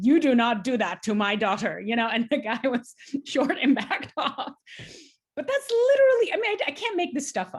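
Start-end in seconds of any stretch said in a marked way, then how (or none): 0.0-1.8 put-on strong Polish accent, much louder. Retelling how your dad stood behind you and told a man off, in a strong polish accent. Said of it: "in his very strong Polish accent".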